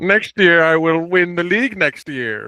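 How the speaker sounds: weird, very slow, high. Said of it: "how Doctor Evil talks".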